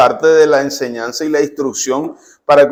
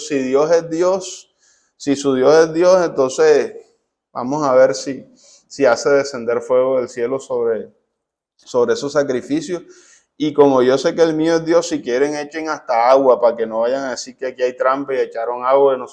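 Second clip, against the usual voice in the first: ordinary delivery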